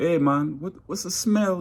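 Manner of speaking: put-on thick Jamaican accent. Retelling a man at orientation asking people about a smell, strong Jamaican accent. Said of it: "he had a strong accent".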